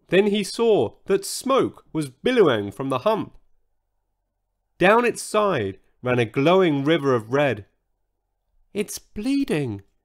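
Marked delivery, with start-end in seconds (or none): 8.7-9.8 soft, high, hushed half-whisper. Watching a glowing red river run down the hump, a character half-whispers. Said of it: "he whispered".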